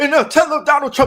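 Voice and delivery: put-on preacher cadence, very high and loud. Mocking how a pastor now sounds in his sermons: imitating Jamal Bryant's sermon voice. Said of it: "what are you trying to sound like?".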